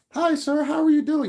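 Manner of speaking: sugary, very high, little put-on voice. Imitating a woman taking a man's order, put-on little voice. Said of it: "they put that little voice on".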